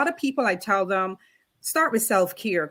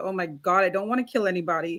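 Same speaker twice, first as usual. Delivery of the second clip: put-on, acted-out scared tone; 3 semitones lower than usual. Speaker recalls being scared when it started happening, retelling being scared. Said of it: "I was scared at first".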